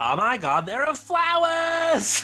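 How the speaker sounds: put-on very high, shrill, swooping Valley Girl squeal. Imagining someone in the background spotting flowers, Valley Girl voice. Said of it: "if I could do a Valley Girl voice".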